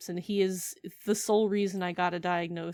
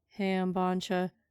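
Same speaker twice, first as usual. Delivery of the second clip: put-on tired voice. Describing your depressed hand therapist by comparison, first doing a tired Bancha voice. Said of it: "tired Bancha going just like".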